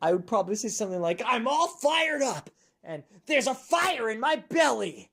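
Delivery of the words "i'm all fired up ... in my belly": put-on fired-up anime hero voice. Saying what a character from the anime Fairy Tail would say: Fairy Tail anime character voice. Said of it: "If I were on Fairy Tail and a character on the anime Fairy Tail".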